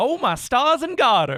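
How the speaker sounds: put-on high Southern dandy accent. Describing how an actor talks in regular conversation: Chuck Norris as Southern dandy. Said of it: "That's how he talks".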